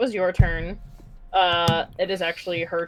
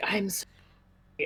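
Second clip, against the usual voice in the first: creepy spider character voice, quieter; 8 dB quieter than usual. Recounting how another player voiced her spider character; creepy spider voice. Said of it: "in her creepy spider voice".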